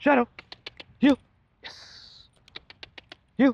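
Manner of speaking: very high, pleasant, bright, happy encouraging tone. Demonstrating a moving command to the dog Shadow, in a high, positive tone. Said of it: "high tone and very positive".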